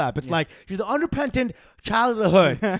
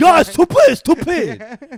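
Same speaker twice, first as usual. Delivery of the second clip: put-on Dominican New York phrasing with a Chinese accent; 6 semitones higher, 8 dB louder than usual. Imitating a woman saying Dominican slang with a failed accent: imitating a failed Dominican accent. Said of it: "classic Dominican New York phrases, but with a Chinese accent".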